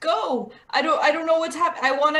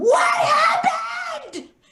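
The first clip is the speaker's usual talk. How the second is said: screaming at top of lungs, very high; 3 dB louder than usual. A game player acting out grabbing a character's face, screaming at the top of lungs. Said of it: "scream at the top of my lungs".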